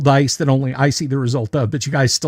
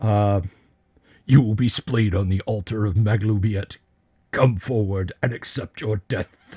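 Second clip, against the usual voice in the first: grunting, much lower and quieter; 4 semitones lower, 4 dB quieter than usual. Game master voicing a bugbear lifting his mace at the party, grunting. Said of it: "He lifts his mace and grunts".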